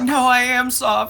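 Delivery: cowering, pleading tone. Player grovels before the disgusted character, groveling and begging. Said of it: "start groveling and cowering and begging".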